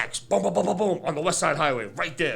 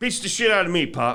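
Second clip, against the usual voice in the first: plain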